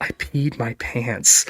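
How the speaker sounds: whispered delivery. Retelling what a bawling partner whispered in his ear during a hug, imitating a whisper. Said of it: "she whispers in my ear".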